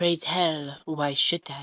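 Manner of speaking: ominous put-on voice. Retelling what Death said in response: imitating Death, mock-ominous. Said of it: "In like an ominous-ish voice".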